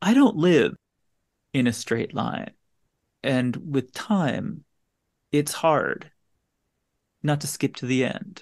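put-on very slow, dragged-out delivery. Quoting a character's lines, imitating how slowly he talks, very slow talking. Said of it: "He talks so slow".

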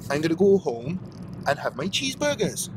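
spontaneous, sing-song put-on Welsh accent. Speaker signing off a video to viewers, Welsh accent. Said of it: "I don't know why I'm talking in a Welsh accent".

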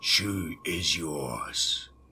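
rasping, raspy monster voice. An enormous creature turns to the narrator and points, speaking in a raspy voice. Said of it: "spoke in a raspy voice".

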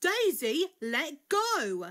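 loud, high-pitched crying out. Narrator reads Blake as Daisy grabs the cups and pulls, crying out. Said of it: "cried Blake".

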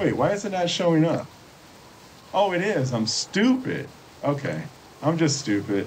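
high, keyed-up, overexcited chatter. A streamer setting up spells in a game, getting too excited. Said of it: "I'm getting too excited here".

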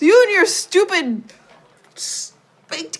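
mock yelling. Describing a scene where a woman yells at a man: retelling a yell at him. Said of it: "she's yelling at him".

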